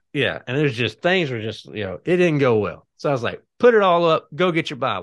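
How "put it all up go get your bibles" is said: very loud, high-pitched, stern barking. A parent retells ordering the kids to get their bibles, very loud. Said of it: "I said that in a very loud voice".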